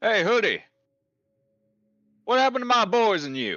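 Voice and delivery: very high, swooping, loud shout carried far. Voicing a rogue character calling over to a player: shouting across to someone. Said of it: "will shout over to you".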